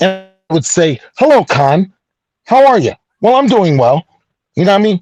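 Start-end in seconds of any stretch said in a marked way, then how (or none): 1.2-4.1 put-on proper, old-fashioned, by-the-book way of speaking. Retelling how he spoke when he first started speaking: imitating his own past proper speech. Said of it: "I spoke like this".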